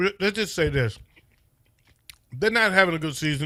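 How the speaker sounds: talking while chewing, mouth full. Speaker talks to listening folks while chewing a gummy, chewing while talking. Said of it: "I apologize for the chewing".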